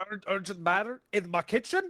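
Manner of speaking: put-on Scottish accent, tripping over the start. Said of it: "Why is he Scottish?".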